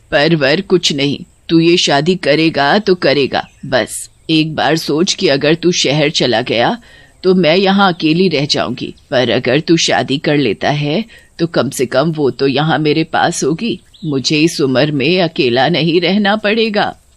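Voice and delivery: put-on old village mother's voice, firm and insistent. Narrator voices the old mother answering her son; an old mother's voice. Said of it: "एक गांव में [name] नाम का एक लड़का अपनी बूढ़ी माँ के साथ एक छोटे से घर में रहता था। / एक गांव में [name] नाम का एक लड़का अपनी बूढ़ी माँ के साथ एक छोटे से घर में रहता था। / एक गांव में [name] नाम का एक".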